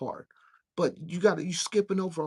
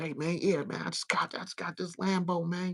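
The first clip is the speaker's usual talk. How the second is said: put-on boastful manner. Mocking someone flossing about a new lambo: imitating a show-off flossing. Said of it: "you flossing all day".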